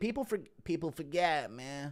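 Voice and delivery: slow put-on voice, each word drawn out. Answering a request for an impression after thanking someone for five dollars, do a Nate Diaz impression. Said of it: "Impression of Nate Diaz saying".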